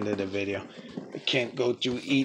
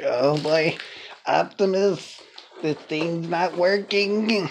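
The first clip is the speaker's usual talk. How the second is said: higher-pitched nerdy robot voice; 6 semitones higher than usual. Voicing Perceptor talking to Optimus, use a nerdy Perceptor voice. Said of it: "it'd probably be for a nerdy a nerdy transformer".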